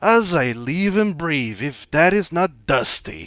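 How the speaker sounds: loud, hearty, boisterous call, as if from afar. Narrator voicing a familiar voice calling from a distance, in a boisterous tone. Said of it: "kind of in a boisterous tone".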